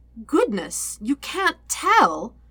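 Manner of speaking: sickly sweet, oily, sing-song menacing voice. Azula replies to Aang's question, dangerously sweet and oily. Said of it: "her voice dangerously sweet and oily".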